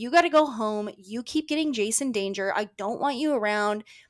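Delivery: full-on, all-out yelling rant. Retelling how one character scolded another: imitating someone yelling. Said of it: "just goes to town yelling at her".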